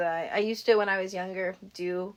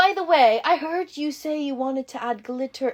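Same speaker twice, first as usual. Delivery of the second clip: put-on British accent, higher; 5 semitones higher, 4 dB louder than usual. Retelling what a teacher said in front of the class: imitating a British teacher's accent. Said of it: "the reason that Jayla is talking like that is because he was British".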